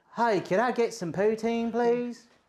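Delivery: fake, put-on American accent. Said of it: "That's American".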